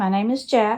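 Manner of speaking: normal talking voice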